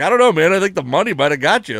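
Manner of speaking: needling, challenging tone. Retelling a receiver coach challenging a player: imitating Frisman Jackson challenging a player. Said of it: "he's just challenging him".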